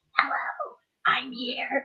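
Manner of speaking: spooky, creepy, eerie voice. Retelling a voice that came through a device: imitating a really creepy voice. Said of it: "this really creepy, like ... voice coming through".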